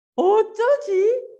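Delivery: put-on high, very slow, childlike panicked fretting. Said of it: "당황해요".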